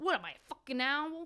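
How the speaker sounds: overdone, exaggerated New York accent. Redo the iconic Wolf of Wall Street line you hated, as Margot Robbie trying a New York accent. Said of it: "tries to do a New York accent".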